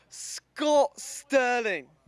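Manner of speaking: very high, loud, booming put-on British accent. Answering a request for a best british accent: best british accent. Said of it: "Can you give me your best British accent?".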